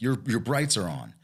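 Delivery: mock aggressive tone of a man. Recounting what a man said at the car window, retelling an aggressive man. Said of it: "Very very aggressive".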